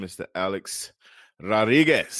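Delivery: put-on Spanish accent on a name. Podcast host welcoming back a good friend, saying his name with a put-on accent. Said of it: "I like saying it with that accent".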